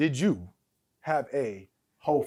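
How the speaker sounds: very slow, deliberate, drawn out word by word. Pressing the other speaker for a yes or no, saying it really slowly. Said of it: "Let me say this really slowly".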